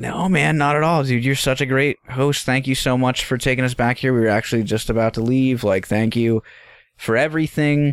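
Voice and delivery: friendly, eager-to-please, placating, reassuring tone. Retelling what he told an angry host who accused them: retelling trying to be nice. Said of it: "I'm trying to be nice".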